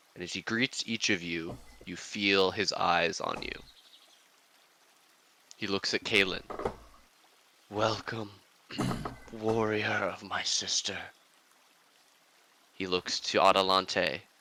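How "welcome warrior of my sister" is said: soft, quiet voice that still carries far. Narrating a figure in the garden greeting each visitor, in a quiet, carrying voice. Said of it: "in a quiet voice that seems to carry".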